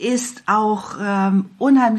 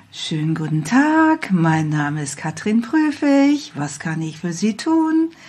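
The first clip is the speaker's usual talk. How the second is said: artificial, emotionless, swooping sing-song call-centre voice; 2 semitones lower than usual. Warning against the classic hotline greeting by demonstrating it: sing-song artificial hotline voice. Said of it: "das melodische Auf und Ab einer klassischen Hotline-Stimme ... hochkünstlich, null emotional".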